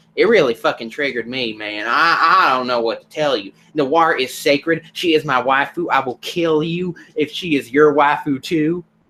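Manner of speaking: put-on Alabama accent. Voicing someone triggered by a scene with noir, in a redneck voice. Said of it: "pitched redneck voice I've ever heard".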